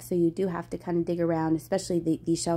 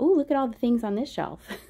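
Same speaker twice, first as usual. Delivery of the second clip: heavily sarcastic, pitched-up, offhand delivery; 5 semitones higher than usual. Retelling a remark about a nearly empty shelf: retelling own sarcastic remark. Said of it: "Here I am being very sarcastic about".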